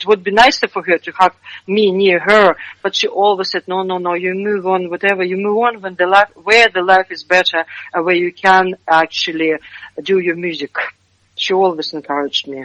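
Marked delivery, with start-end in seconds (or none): none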